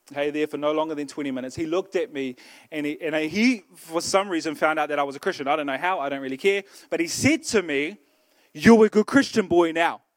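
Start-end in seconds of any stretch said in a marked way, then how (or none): 8.6-10.0 put-on hostile, aggressive, confrontational in-your-face delivery. Retelling what a man said to the speaker: imitating an aggressive tone. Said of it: "he kind of said it in an aggressive way".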